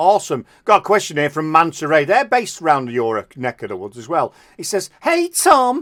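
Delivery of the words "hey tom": very high-pitched, silly put-on voice. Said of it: "He doesn't speak like that".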